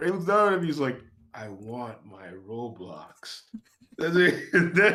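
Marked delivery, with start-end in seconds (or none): 1.3-3.4 put-on very quiet, very slow, low, hushed menacing kid voice. Telling a story, speaker acts out the little brother at the door, mock-menacing.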